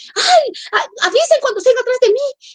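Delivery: high, jumpy, rattled, agitated voice. Recalling a time she was always scared and jumpy: retelling her agitated words. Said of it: "yo ya estaba como siempre muy alterada".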